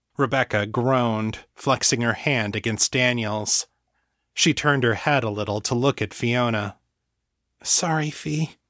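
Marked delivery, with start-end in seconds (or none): 7.6-8.5 exhausted, embarrassed, sheepish voice, pitched up. Narrator reads a woman apologizing to another woman after being roused, exhausted and embarrassed. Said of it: "sounding both exhausted and embarrassed".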